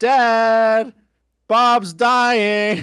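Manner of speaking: put-on shrill, loud yell with one word drawn out. Retelling a scene where a character sees bleeding eyes: imitating a yell. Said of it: "sees that his eyes are bleeding and yells".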